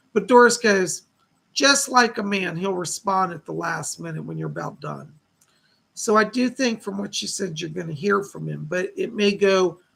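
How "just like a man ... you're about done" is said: normal talking voice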